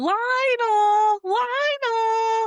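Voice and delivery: very high shriek, one word stretched out long. Retelling how a woman stood below a window, the speaker acts out her screaming. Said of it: "Starts screaming at the window".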